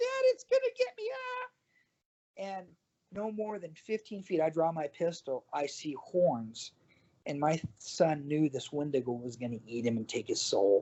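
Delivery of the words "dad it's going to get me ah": put-on shrill, very high-pitched, girlish scream. Father retelling how his son yelled to him, imitating a little-girl-voice yell. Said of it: "a little girl voice".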